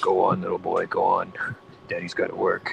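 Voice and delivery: put-on movie-preview announcer voice. Retelling how the man spoke to his little son, Don the movie previews guy voice. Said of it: "the movie previews guy".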